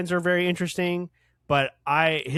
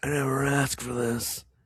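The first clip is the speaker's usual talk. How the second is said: put-on edgy game hero voice. Quoting a game hero's iconic line while mocking his voice: imitating Adam's voice. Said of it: "he just talks like this all the time".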